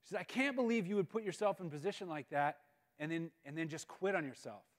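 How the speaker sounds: plain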